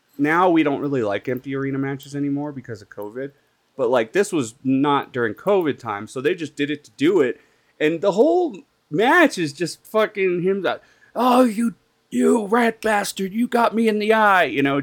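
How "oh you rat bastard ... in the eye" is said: very high-pitched, furious screaming. A speaker recounts a wrestling match, retelling a wrestler screaming at his opponent. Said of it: "just screaming at him".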